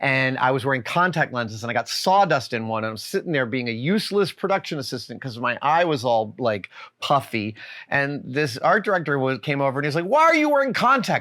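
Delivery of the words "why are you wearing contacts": acted, shrill, high, angry yelling. Retelling how an art director came over to the speaker on set, imitating his yelling. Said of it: "He's literally yelling at me".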